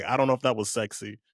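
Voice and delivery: normal talking voice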